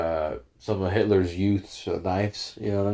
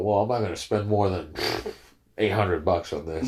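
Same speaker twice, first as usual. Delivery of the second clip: usual speaking voice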